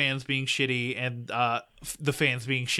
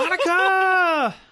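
mock scream, much higher, louder; 8 dB louder than usual. Quoting a racing movie scene, the speaker is imitating a scream. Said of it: "he screams".

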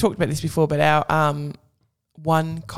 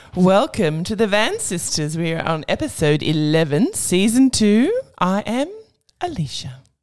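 put-on sexy voice, sultry and swooping; 3 semitones higher than usual. Host introducing the show's new episode in a sexy voice. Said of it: "Your voice sounded very sexy".

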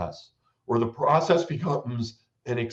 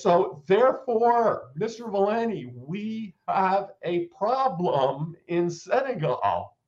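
put-on drawn-out, slow, overly loud, pitched-up voice; 7 semitones higher than usual. Speaker retells answering a man the way one talks to old people: speaking slowly and loudly. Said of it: "You speak more slowly and loudly".

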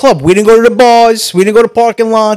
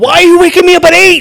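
put-on screaming, pitched higher; 8 semitones higher than usual. Retelling being woken at eight after a night shift: imitating his past screaming. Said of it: "He's screaming at me".

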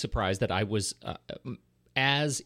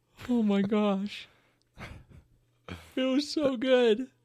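very high, drawn-out, yawn-like drawl; 13 semitones higher than usual. Gushing to co-hosts about a new movie trailer, yawning and sounding bored. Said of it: "It sounds like you're yawning".

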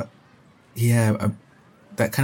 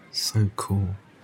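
muttered under breath, quieter; 2 semitones lower, 4 dB quieter than usual. Voicing a character reacting to a quick transformation: muttered under breath. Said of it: "Under his breath".

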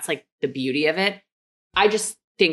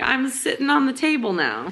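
very high, squeaky little puppy voice; 10 semitones higher than usual. Voicing a puppy's thoughts after its yawn: voicing the puppy. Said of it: "He's like".

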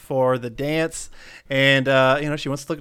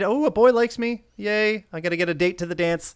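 mock excited, thrilled, high-pitched gushing chatter; 5 semitones higher than usual. Retelling a movie scene, quoting Kat asked to the dance: imitating excited Kat. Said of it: "And she's all excited".

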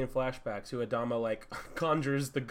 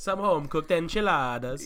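fake silly Italian accent, higher; 4 semitones higher, 4 dB louder than usual. Joking about family food in a stupid put-on italian accent. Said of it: "so funny to do stupid Italian accents".

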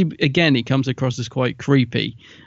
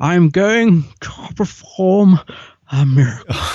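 put-on very slow, pitched-up, very drawn-out old-character voice; 5 semitones higher, 4 dB louder than usual. Imitating a character when he is the old guy: Elephant Man voice. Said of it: "almost like the Elephant Man voices".

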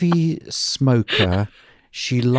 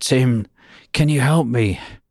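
rough, gravelly, raspy voice. Tim recalls Kay phoning him, imitating Kay's gravelly voice. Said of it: "this gravelly voice".

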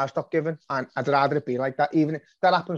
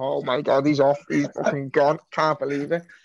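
put-on shocked, disbelieving reaction. Retelling seeing it on screen: retelling own shocked reaction. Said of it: "And then I see it and I was like".

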